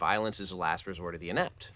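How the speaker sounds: ordinary delivery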